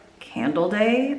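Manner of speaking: slow, sarcastic, obvious duh tone.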